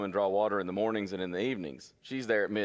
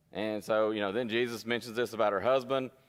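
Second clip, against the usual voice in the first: ordinary delivery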